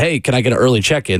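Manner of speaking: ordinary talk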